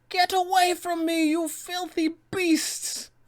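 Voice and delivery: very high, drawn-out, scornful voice. A DM guide voices the villain berating players who stay in the fight: Baba Lysaga voice.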